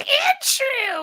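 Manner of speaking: name squeaked at very high pitch. Showing what voicing a Pokemon would sound like: Sandshrew Pokemon voice. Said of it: "or play a Pokemon".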